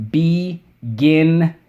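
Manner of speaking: "beginning" with third syllable "-ning" stressed hard. Pronunciation lesson, showing the class how to say beginning; stress third syllable of beginning. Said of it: "I'm emphasizing that third syllable for everybody".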